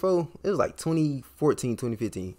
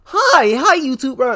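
fake hype, shouted bright and high with full energy; 11 semitones higher, 12 dB louder than usual. Mocking how energetic YouTubers greet viewers, fake energetic YouTuber voice. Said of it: "they be all energetic and stuff".

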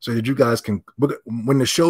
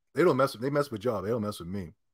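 ordinary talk

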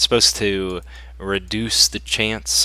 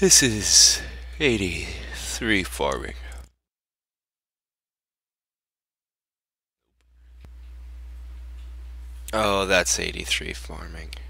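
sleepy just-woken-up voice; 2 semitones lower than usual. Commenting on farming progress in the game, just waking up: just-woken-up voice. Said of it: "forgive my voice here. I am just waking up".

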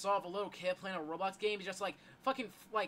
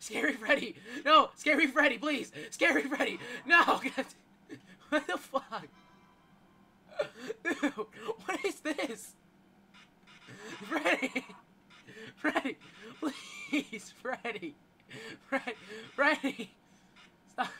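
loud, high begging tone while cracking up; 5 semitones higher, 7 dB louder than usual. Playing a game, begging Freddy to stop, laughing while pleading. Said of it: "Why am I la-".

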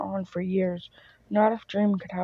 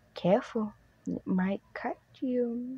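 stern, smooth purring voice; 3 semitones higher, 5 dB quieter than usual. Narrator reading a character pressing a blade to another's neck, purring. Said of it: "he purrs".

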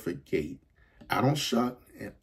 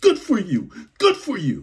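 put-on trembling old woman voice, shrill, very high, very loud; 10 semitones higher, 9 dB louder than usual. Retelling an elderly woman's praise on a train: imitating a shaking elderly woman. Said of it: "And she's shaking".

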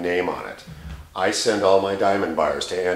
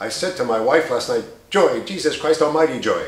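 fast staccato announcer voice, pitched up, choppy; 7 semitones higher, 4 dB louder than usual. Describing fast staccato deliveries, the speaker gives an example: Regis Philbin impression. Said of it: "Or Regis Philbin, the famous announcer".

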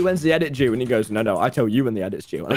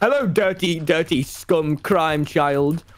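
very slow, dragged-out delivery. Retelling what the friend says to him, imitating Wilbur's voice. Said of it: "That's not how I sound".

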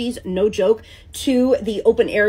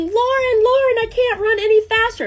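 put-on, very high, shrieked shout; 11 semitones higher than usual. Running back to the ship in pouring rain, retelling a yell. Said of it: "And I'm yelling".

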